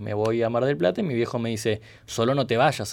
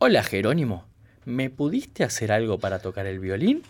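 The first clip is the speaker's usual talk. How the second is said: usual speaking voice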